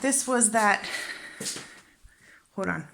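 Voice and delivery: breathless, winded, catching breath mid-line. Showing a renovation in progress, stopping to catch their breath, out of breath. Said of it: "pause while I catch my breath".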